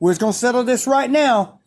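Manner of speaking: mock pissed-off voice. Retelling what an angry coach said when called over: imitating an angry coach. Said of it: "he's just all pissed".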